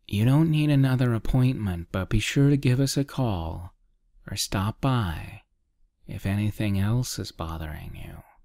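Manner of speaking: usual speaking voice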